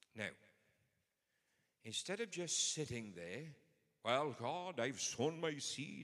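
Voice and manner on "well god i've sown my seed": slight put-on Welsh accent, slow, high and drawn out. Acting out someone speaking to God instead of just sitting there, in a token Welsh accent. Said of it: "I don't know why God speaks with a Welsh accent".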